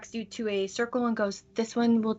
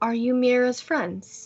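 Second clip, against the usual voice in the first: put-on polite, gentle, mild little old lady voice. A narrator voices the oldest person the players have met, greeting them very quietly. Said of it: "she very quietly goes".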